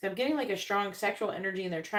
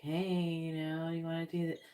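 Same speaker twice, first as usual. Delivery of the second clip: soft, gentle, drifting dreamy tone. Retelling what the realtor said on the phone, imitating a gentle, dreamy voice. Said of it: "talking to me in this like gentle, dreamy voice".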